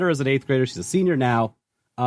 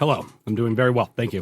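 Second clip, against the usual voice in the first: quick, succinct, to-the-point speech; 2 semitones lower than usual. A podcast guest answering the host's greeting, speaking quickly and succinctly. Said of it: "speaking quickly and succinctly".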